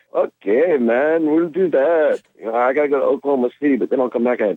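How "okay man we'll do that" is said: put-on very drawn out, slow, high Swedish accent. Retelling another man's replies to his requests to come back and record; imitating a Swedish accent. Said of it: "he's got this Swedish accent".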